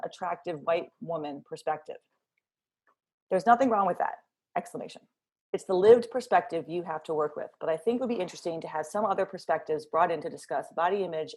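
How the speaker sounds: ordinary delivery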